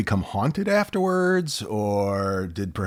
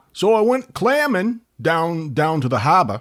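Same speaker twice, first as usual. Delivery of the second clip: rough, loud, high Down East Maine accent; 7 semitones higher, 6 dB louder than usual. Explaining a down east accent by showing it: down east accent. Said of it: "Down East would be".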